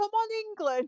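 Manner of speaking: put-on posh accent. Asked to say one phrase, the speaker does it in a posh voice. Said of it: "I'll do it in a posh voice".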